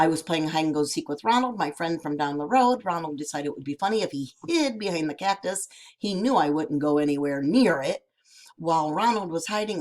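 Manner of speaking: plain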